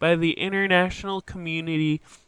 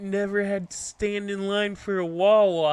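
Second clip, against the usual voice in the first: bad, poorly done fake Philadelphia accent; 3 semitones higher than usual. Speaker retelling what a man in line said, in a bad Philadelphia accent. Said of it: "I can't do a Philly accent very well".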